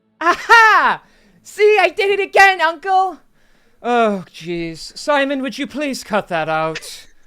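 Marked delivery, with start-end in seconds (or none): 0.2-3.2 put-on shrill, very high, loud, rambunctious little-boy yell. Voicing a rambunctious little boy with a wooden sword: rambunctious little boy voice. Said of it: "he's just a rambunctious little boy".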